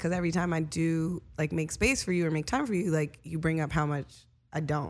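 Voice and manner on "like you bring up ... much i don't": ordinary talk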